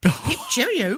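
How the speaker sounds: put-on polite English accent. Imagining what a plane captain said: english accent. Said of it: "he probably had an English accent".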